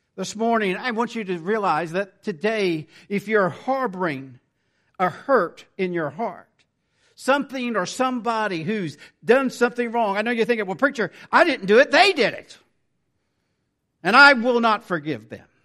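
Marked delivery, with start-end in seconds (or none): 10.7-15.4 loud, bitter mock voice full of resentment and hatred. Voicing a listener refusing to forgive, imitating a bitter, hateful voice. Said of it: "Do you hear the hatred?".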